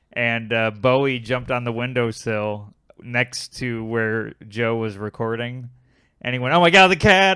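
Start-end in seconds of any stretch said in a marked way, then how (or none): 6.6-7.4 very loud, sudden, high-pitched yell. Retelling a guest's reaction to a cat on the windowsill: imitating Joe shouting loudly. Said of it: "like, loud".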